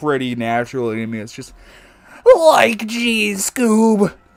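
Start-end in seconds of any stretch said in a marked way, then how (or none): 2.4-4.1 very high, jumping up, put-on cartoon sidekick voice. Showing how naturally the Shaggy voice comes: Shaggy voice. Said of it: "the Shaggy voice really comes".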